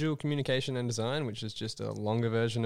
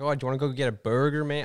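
put-on American accent, louder, slower; 3 semitones higher, 6 dB louder than usual. Retelling a weird greeting habit from living on campus, in a put-on american accent. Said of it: "put on like an American accent".

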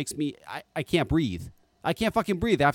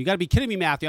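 usual speaking voice

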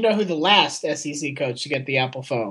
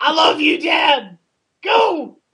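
put-on yell, higher and louder; 13 semitones higher, 4 dB louder than usual. Acting out someone yelling a message to pigeons: imitating Will Muschamp yelling. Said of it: "he yells at 'em".

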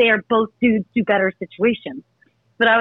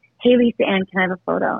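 imitated whisper; 2 semitones lower than usual. Retelling a guy asking for a photo: imitating a whisper. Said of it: "whispers in my ear".

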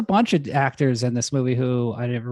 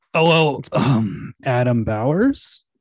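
put-on drunk voice. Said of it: "he'll just be like".

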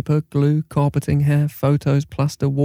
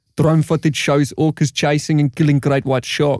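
put-on South African accent. Reading out a headline while the group practises accents, in a south african accent. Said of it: "How the hell do you say drone in a South African accent?".

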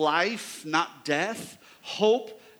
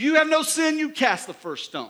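very loud, high, swooping proclaiming voice; 7 semitones higher, 5 dB louder than usual. Acting out Jesus addressing the crowd publicly: acting out Jesus speaking very loud. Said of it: "Very loud".

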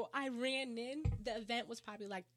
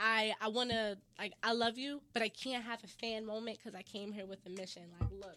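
plain

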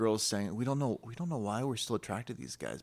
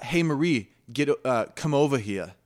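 put-on Brooklyn accent, higher; 4 semitones higher, 9 dB louder than usual. Retelling how a girl's dad calls her over, in a Brooklyn accent. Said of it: "Like if you heard the accent".

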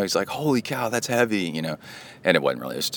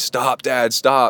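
put-on high yelling kid voice; 6 semitones higher, 4 dB louder than usual. Retelling waking Kai with weights and dogs: imitating Kai yelling. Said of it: "Kai's yelling".

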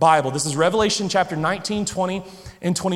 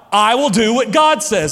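put-on loud delivery, louder; 3 semitones higher, 6 dB louder than usual. Recalling reaching Jesus's part while acting, retelling a loud declaration. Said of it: "real loud".

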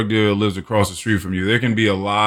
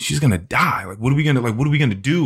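frantic, panicked, tearful, close to bawling; 3 semitones higher than usual. Retelling telling dad about mom smoking, imitating own past crying panic. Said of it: "I was just started bawling, crying".

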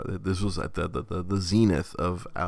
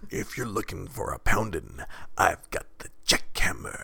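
put-on rough, gravelly showman voice. Quoting a porn-star character's catchphrase, in a put-on gravelly voice. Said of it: "just like with that gravelly voice".

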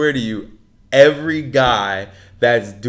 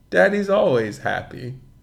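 put-on offhand, disinterested tone, slightly high; 5 semitones higher, 3 dB quieter than usual. Retelling a husband's reply to his wife as he walks away, mock-nonchalant reply. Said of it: "So nonchalant, so disinterested".

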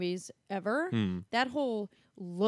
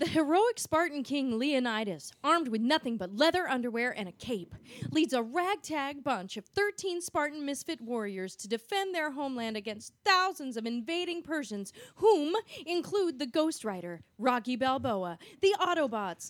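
bursting with put-on, over-the-top enthusiastic excitement; 3 semitones higher than usual. Reading an IMDb movie description on request, over-the-top enthusiasm. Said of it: "read it with as like as much like enthusiasm as you can possibly muster".

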